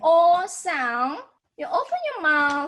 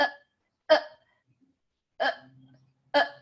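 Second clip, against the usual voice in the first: put-on hiccup sounds. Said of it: "Hiccup sound".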